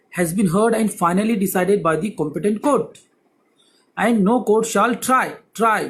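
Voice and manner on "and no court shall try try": heavy stress placed on the word "try". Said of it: "putting emphasis on this word try".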